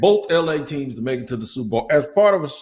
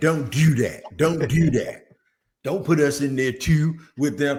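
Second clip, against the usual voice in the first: put-on Baltimore local accent. Imitating someone in Baltimore objecting to the DMV label: Baltimore accent. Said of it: "I know that little accent".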